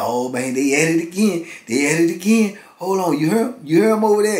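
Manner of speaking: giggly laughing speech. Retelling how a cellmate reacted to neighbours fighting: imitating someone giggling while talking. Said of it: "He just giggling and laughing".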